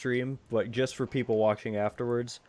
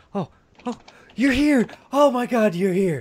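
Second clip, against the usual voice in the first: very high, loud, overjoyed, excited cry; 10 semitones higher, 7 dB louder than usual. Voicing the diplomat as he sees the party arrive, freaking out with excitement. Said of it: "he freaks out and he jumps up".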